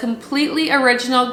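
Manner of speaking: plain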